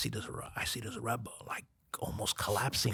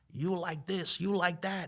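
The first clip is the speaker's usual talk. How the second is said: high, mock furious, angry screaming; 6 semitones higher than usual. Retelling how the man who bought the seat cursed him out: imitating someone screaming angrily. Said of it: "starts screaming and cursing me out".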